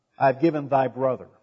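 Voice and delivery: ordinary talk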